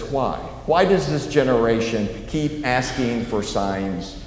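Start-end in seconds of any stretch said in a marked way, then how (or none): none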